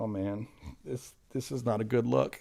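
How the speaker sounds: sheepish, sorry-sounding voice. Picturing Jesus shaking his head while giving notes: voicing an embarrassed Jesus. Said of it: "picture Jesus in the background of me going".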